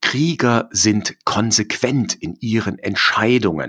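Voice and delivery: ordinary talk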